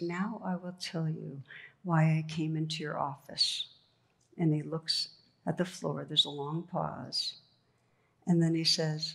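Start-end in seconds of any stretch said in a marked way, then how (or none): none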